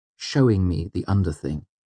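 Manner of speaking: usual speaking voice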